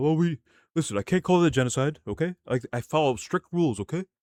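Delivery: calm, composed talking-head tone. Mocking a politician who refuses a label: imitating a calm speaker. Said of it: "Mister Calm guy who's saying".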